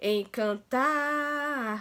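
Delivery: cheering encantar with the tar dragged long. Finding the stressed syllable by cheering the word: cheer-like drawn-out tar in encantar. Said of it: "A sílaba que se arrastou mais é tar".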